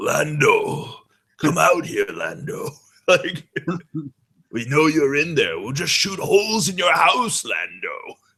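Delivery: angry kung fu movie villain voice, high and swooping. Quoting the gang member in the hat from a movie, imitating angry kung fu bad guy. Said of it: "his angry kung fu bad guy voice".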